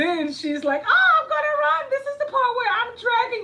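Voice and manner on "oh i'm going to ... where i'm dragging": very high, loud, playacted horror-movie victim voice. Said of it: "she's mimicking the part like".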